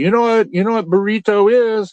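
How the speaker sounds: bad put-on Mexican accent. Quoting the woman who was waiting on them, in a bad Mexican accent. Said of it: "I'm doing a bad Mexican accent".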